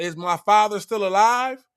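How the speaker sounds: ordinary talk, nothing marked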